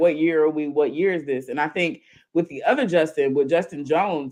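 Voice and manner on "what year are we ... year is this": normal talking voice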